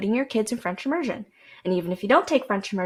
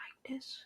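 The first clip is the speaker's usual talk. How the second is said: very soft, breathy, hushed ASMR-style whispered murmur; 4 semitones higher, 20 dB quieter than usual. Showing how an old video sounded, in a soft voice. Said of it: "in a soft voice".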